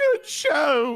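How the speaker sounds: very loud, high exclamation. Reading a post aloud after being asked for a British voice: imitating Pops. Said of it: "as Pops would say".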